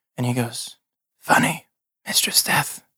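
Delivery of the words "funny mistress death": whispered, barely voiced, hushed. Voicing a figure with a sewn-shut mouth, heard in the head: whisper. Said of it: "in your head you hear that whisper again".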